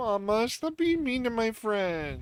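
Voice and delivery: put-on very high, near-crying, tearful little baby voice. Baby peeking out of a bag pleads with its mother: sad baby voice, near tears. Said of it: "its eyes looking big and sad, like he's about to start crying".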